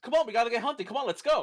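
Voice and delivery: high, rushed, words run together with no pauses. Imitating a game's main character who zooms through his lines: imitating rushed speech. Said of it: "you just said that all in one word".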